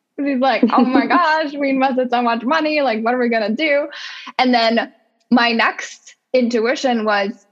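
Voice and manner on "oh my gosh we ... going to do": mock panicked, alarmed, freaked-out, fast rush. Retelling her husband's reaction, imitating him freaking out. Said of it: "my sweet husband was freaking out".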